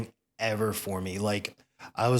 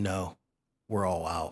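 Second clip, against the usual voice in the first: low, utterly serious, deadpan tone; 4 semitones lower, 4 dB quieter than usual. Retelling what she told him, looking him in the eyes, in a dead-serious tone. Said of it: "in the most serious tone ever".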